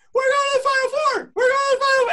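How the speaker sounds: very high, loud crying voice, rushed. Retelling dad's phone call when his team reached the Final Four, imitating dad's high crying voice. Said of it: "And his voice is so high. He's crying".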